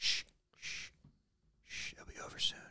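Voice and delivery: eerie, sinister, creepy whisper, very hushed. Acting out a mascot choking someone out: creepy whisper as Ronald McDonald. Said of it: "he's just whispering".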